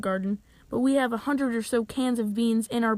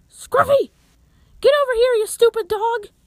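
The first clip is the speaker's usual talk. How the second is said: very high, loud yell. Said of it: "she's yelling".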